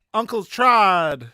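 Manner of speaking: high, loud shout with the word drawn out. About to jump at Trod in the game, shouting his name. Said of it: "I'm gonna shout".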